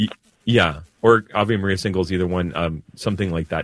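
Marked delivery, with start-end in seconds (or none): 1.0-2.1 rushed, too fast, hard to catch. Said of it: "you said it so fast I can't get".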